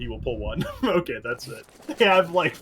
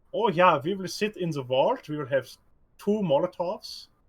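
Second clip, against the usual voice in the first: put-on German accent, higher; 5 semitones higher than usual. Voicing what a team is thinking about its plan: German accent. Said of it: "I love your, uh, German accent".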